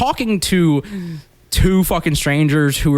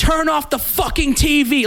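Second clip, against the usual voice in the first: mock very high, shrill, enraged scream; 12 semitones higher than usual. Retelling a girl who stared the speaker dead in the face, imitating her screaming. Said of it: "like screaming".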